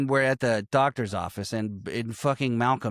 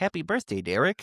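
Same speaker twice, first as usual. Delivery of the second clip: small, little, very polite well-mannered voice; 4 semitones higher than usual. Retelling how a boy greets the bullies: Cole's little polite voice. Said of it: "breaks my heart with his little voice".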